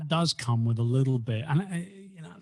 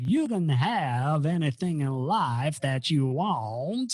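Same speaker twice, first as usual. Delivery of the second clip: slow, rough Alabama drawl, want drawn out. Quoting a motivational speaker's line: Zig Ziglar impression with Alabama accent. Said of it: "I'm probably gonna butcher the Alabama accent now".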